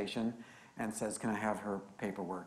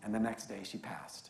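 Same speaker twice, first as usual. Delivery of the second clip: usual speaking voice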